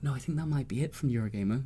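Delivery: quiet whispering. On a podcast, naming team members sitting nearby in the office, whispering. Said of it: "I love how you're whispering".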